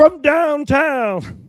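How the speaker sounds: very high-pitched, courtside-style play-by-play announcer voice. Asked for an announcer call on every made three, doing an NBA announcer impression. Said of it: "I can't do his voice".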